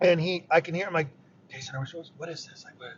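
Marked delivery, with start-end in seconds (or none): 1.5-2.9 hushed, barely voiced whisper. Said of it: "I'm whispering".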